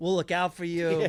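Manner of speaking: mock-condescending tone. Mimicking people who say they'll pray for you: imitating condescending tone.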